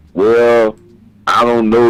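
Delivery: very slow, dragging, hesitant, unsure drawl. Speaker imitates the offense in interviews after a loss, talking real slow. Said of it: "they're talking real slow".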